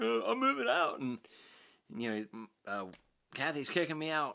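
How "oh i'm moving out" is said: mock crying, higher pitch. Retelling Sean's short video about moving out: imitating Sean crying. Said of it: "He's, like, crying".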